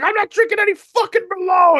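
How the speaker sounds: mock very high, furious, pissed-off outburst. Retelling a movie scene where a character refuses Merlot: imitating angry Paul Giamatti. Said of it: "gets really pissed off".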